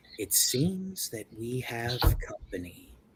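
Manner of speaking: hushed, whispered undead creature voice. The lich's face looks at you and whispers again: lich whisper. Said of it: "it whispers again".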